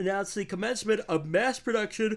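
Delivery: mid-yawn. Reporting a company's announcement, yawning. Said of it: "I don't know why I'm yawning so much this week".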